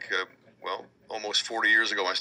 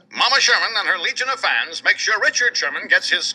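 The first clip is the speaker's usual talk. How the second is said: put-on old cartoon voice, higher and louder; 11 semitones higher, 9 dB louder than usual. Doing a line for the interviewer in an old Bullwinkle cartoon voice. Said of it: "the old Bullwinkle cartoon voices".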